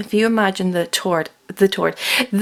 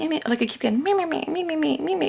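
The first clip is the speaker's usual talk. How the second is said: soft, high, nagging, whiny mocking voice; 8 semitones higher, 5 dB quieter than usual. Telling Scorpios about people annoying them, imitating those voices in a mocking little voice. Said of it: "You know those little voices".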